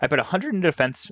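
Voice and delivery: voice cracking. Going over a Pokemon's stats for listeners, voice cracking. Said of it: "a little voice crack there".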